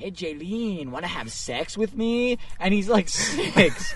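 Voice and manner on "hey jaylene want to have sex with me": silly, funny put-on little-boy voice. Retelling what a six-year-old said on a field trip, in a put-on voice quoting a kid. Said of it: "Why'd you give him that voice?".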